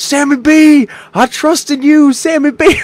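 acted-out screaming. Retelling wanting an autograph in public, re-enacting screaming at the player. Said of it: "So I'm screaming".

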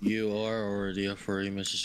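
said ominously. Answering the other speaker's denial; ominous tone. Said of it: "why do you say it so ominously".

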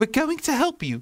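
eager, excited, very high-pitched cry. Answering an injured girl who says it hurts: excited. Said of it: "said Ashley excitedly".

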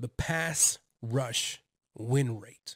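deliberate, very slow, careful enunciation, each word spaced. Naming a defensive stat that's a tongue twister, said slowly. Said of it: "I had to say that slow".

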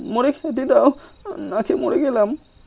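fearful squeaky voice. Narrating what an old man says to the narrator: frightened squeaky voice. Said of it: "ভয়ের সুরে লোকটা চিঁচি করে বললে".

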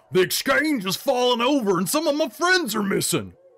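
very high, loud shout climbing in pitch. A game narrator voices a human miner among complaining townsfolk: shouting. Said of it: "A human miner shouts".

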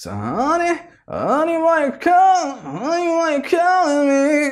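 strongly nasal tone. Breaking down a voice's tonality and demonstrating it: very nasal voice. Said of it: "It's pretty much like very nasal".

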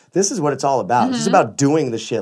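usual speaking voice

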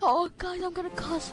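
mocking put-on voice. Mocking another player for swearing quietly: mocking imitation of a player. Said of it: "You're like".

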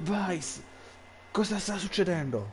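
yelling loudly. Covering his ears amid deafening buzzing, he calls to a companion: shouting to be heard. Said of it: "urlò per farsi sentire".

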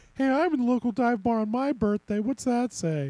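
sad-sack, pathetic, pitiful put-on voice. Playing a game, voicing a woman seen in it: pathetic voice. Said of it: "That was my pathetic voice".

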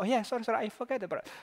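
very high-pitched put-on monkey voice. Acting out the distracted monkey mind asked again to watch breath: voicing the monkey mind. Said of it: "And the monkey mind says".

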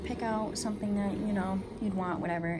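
plain

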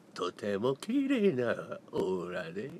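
swooping, put-on celebrity voice. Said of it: "[name]のモノマネやっていい？".

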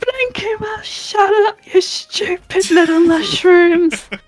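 screaming in character voice. Player voicing Jomp during a tabletop game scene, screaming. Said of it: "She's literally screaming at them".

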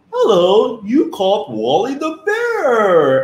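loud, very high-pitched voice. Imitating the recorded greeting on a kids' phone line, Wally the Bear voice. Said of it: "this is where my voice comes from".

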